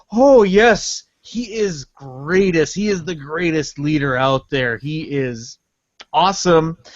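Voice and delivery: heavily sarcastic, ironic, insincere tone. Picturing a north korean hipster praising the leader: imitating a sarcastic hipster. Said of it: "tight pant wearing hipster saying".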